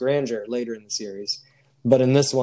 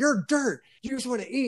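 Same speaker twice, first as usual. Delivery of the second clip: mock, very high, berating and insulting holler; 12 semitones higher than usual. Retelling a TV episode where a character yells at a crying girl: imitating someone yelling. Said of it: "yelling at her".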